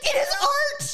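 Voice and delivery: really passionate, high, loud cry like a stage speech.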